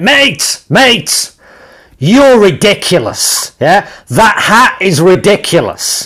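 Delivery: put-on Scottish accent, high, slow, hollered upward. Retelling what a man on the corner shouted up: imitating a shouted Scottish accent. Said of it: "He shouted up at me and went".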